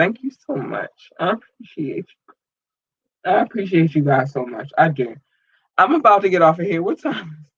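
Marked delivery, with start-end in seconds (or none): 0.0-5.1 choked up, fighting back tears. Thanking supporters while trying not to get emotional: holding back tears. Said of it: "I'm trying not to get emotional".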